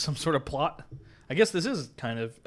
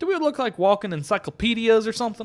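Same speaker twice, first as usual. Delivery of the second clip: very high-pitched fake Southern accent; 10 semitones higher, 8 dB louder than usual. Voicing one of several characters being questioned, in a put-on southern accent. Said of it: "I'm giving this guy a southern accent".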